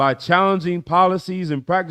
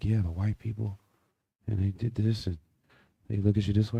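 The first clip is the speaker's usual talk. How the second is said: secretive, hushed half-whisper, very quiet, barely audible; 7 semitones lower, 10 dB quieter than usual. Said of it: "Grandmother, why are you whispering?".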